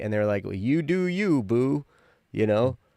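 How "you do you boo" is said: mock, very slow, drawn-out teasing tone. Retelling how an ex made fun of them; imitating a mocking tone. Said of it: "they were kind of making fun of me".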